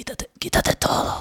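breathy, romantic, whispered deep radio-announcer voice. Retelling how someone speaks in a romantic moment, deep romantic announcer voice. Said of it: "la voz grave así como de locutor".

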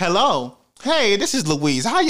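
proper, polite phone voice.

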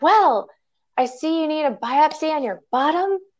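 very high, carelessly loud, blurted delivery. Retelling what a woman said on coming into the office: imitating someone speaking loudly. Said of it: "And she says it so loud".

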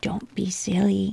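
usual speaking voice

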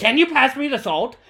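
put-on angry voice. Speaker telling someone they'll grow up to be one, imitating an angry spanish mom. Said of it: "all Spanish moms just sound angry for no reason".

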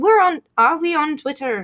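put-on Irish accent. Speaking to a co-host, switching into an accent on purpose: Irish accent. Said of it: "now I'm going into an Irish".

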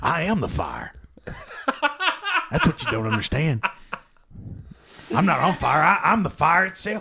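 celebrity voice with wide, wild up-and-down pitch swoops. Doing an impression while the others guess celebrities: Gary Busey voice. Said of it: "You sound more like Gary Busey right now".

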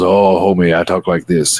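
put-on voice of an old comedian. Describing the comedian Paul Mooney's bit: Paul Mooney impression.

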